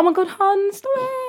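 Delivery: put-on friendly tone. Showing how they call people hun when being nice: imitating a nice tone. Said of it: "But if I'm being nice".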